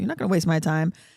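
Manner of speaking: usual speaking voice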